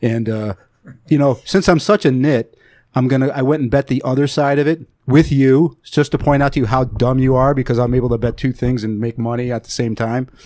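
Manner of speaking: ordinary talk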